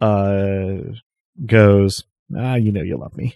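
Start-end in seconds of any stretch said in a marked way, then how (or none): 2.4-3.3 sotto voce mutter, quieter. Voicing a character muttering deniably to another: muttering under breath. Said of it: "mutters again".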